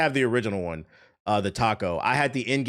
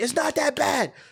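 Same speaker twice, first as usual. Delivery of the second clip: very high, shrill, shrieking scream. Retelling what they used to yell at the TV: imitating own past screaming. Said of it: "I used to scream at the T V".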